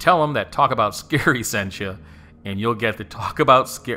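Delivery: loud, laughing through speech. Plugging the Lizzie Borden Bed and Breakfast on the episode, laughing while talking. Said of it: "Sorry, I'm laughing".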